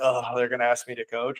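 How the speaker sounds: play-acted soft mutter, faintly scornful and disdainful. Acting out how coaches say they'll be asked to coach: imitating slight disdain. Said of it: "with a little bit of disdain".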